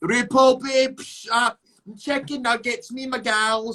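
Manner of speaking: showy, high-pitched put-on persona voice. Retelling how Lawrence suddenly talked on the show: imitating Lawrence on the show. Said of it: "Lawrence doesn't talk like that".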